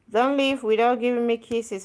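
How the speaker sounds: ordinary talk, nothing marked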